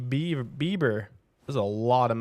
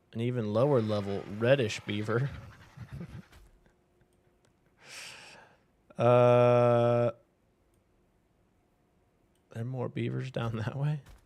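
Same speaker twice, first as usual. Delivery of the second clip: talking through giggles, with a drawn-out "uh". Picking out a beaver in a game, giggling while talking. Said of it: "I'm giggling like a child before the words even come out".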